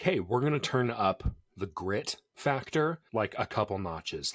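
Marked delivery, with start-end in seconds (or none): none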